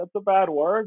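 put-on high, teary child voice, close to crying. Retelling the son's reply after being scolded: imitating a teary-eyed child. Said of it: "got, like, teary-eyed".

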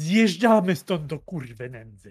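resounding, commanding, loud booming voice. Player character telling everyone to leave, fairly loud resounding voice. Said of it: "dość doniosłym głosem".

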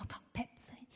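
mock very quiet whisper. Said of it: "she did it that quiet".

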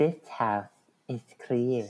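hushed, soft little voice. Trying the actress's line from Poltergeist after another speaker tried it: imitating the Poltergeist actress. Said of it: "Okay, I'm gonna try it".

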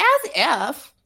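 put-on high-pitched valley girl way of speaking. Recapping a scene, quoting a character's reply, in a Valley Girl voice. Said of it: "word vomit in Valley Girl".

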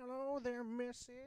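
put-on shrill, very high, loud old-man voice. Acting out a grandpa in a kink scene for a laugh: acting as a grandpa. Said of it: "You'd just be like".

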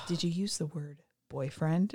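seductive, soft, sexy voice. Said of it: "in his sexy [name] voice".

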